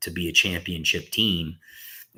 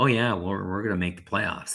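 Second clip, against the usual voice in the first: giggling, laugh-laced words; 2 semitones higher than usual. Retelling players on stage answering a kid: imitating players laughing while talking. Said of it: "looking at each other laughing like".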